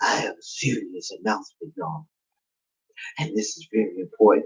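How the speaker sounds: put-on raspy, breathy near-whisper. Retelling a hurt man making an announcement, imitating a raspy voice. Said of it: "He got like a raspy voice".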